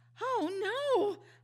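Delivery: startled, alarmed, gasping cry, high-pitched and loud. Reading a children's story aloud, the narrating girl's line, gasping. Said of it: "I gasped".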